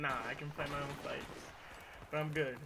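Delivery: ordinary talk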